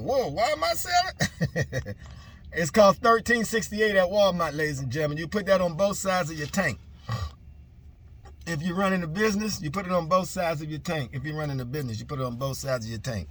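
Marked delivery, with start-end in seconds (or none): 0.0-2.0 much higher surprised, amazed whoa. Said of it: "I was like".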